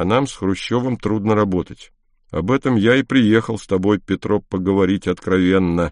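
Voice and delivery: normal talking voice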